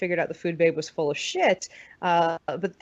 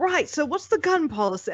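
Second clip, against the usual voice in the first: butchered, bad put-on British accent, pitched up; 8 semitones higher than usual. Recalling people in England questioning them, the speaker uses a butchered British accent. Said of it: "I'm butchering a British accent".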